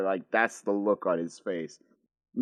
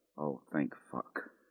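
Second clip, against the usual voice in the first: barely audible whisper under the breath; 6 semitones lower, 13 dB quieter than usual. Narrating a game scene, a character reacts after something is gone: whispered under her breath. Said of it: "Mary whispers under her breath".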